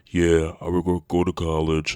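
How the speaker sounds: heavily defeated, beaten-down delivery. Speaker mocks how they sounded in an old video, in a mock heavily defeated tone. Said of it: "I sound like I was heavily defeated in a tone like this".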